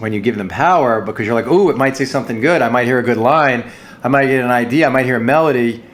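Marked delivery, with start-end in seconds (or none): none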